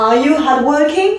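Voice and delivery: question-like rising tune on "hardworking". Explaining yes-no question intonation in French, rising pitch on hardworking. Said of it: "Yep, je monte".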